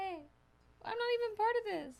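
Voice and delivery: put-on very high-pitched, sulky child voice. Picturing Bing left out of the talk: voicing Bing as a left-out kid. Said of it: "Bing is just sitting there like".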